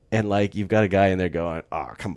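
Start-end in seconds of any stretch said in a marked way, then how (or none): 1.7-2.1 put-on skeptical scoff, lower and quieter. Describing a side-eyeing character reacting to the mystical talk: imitating skeptical Han Solo. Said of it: "skeptical comic relief that Harrison Ford".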